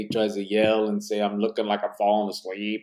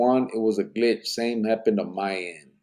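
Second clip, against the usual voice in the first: usual speaking voice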